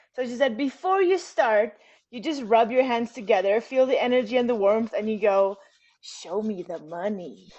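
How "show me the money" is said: put-on low, slow, drawn-out creepy voice. Demonstrating a fun ritual before writing a profit list, in a creepy voice. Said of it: "you do it in this creepy voice".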